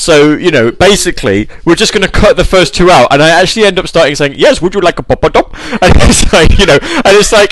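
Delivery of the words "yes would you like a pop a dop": put-on slipped into Indian accent. Retelling a recording where he could not drop it, in an indian accent. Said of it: "I can't get out of an Indian accent".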